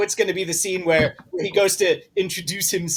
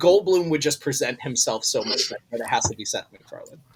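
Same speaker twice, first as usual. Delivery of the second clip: ordinary talk, nothing marked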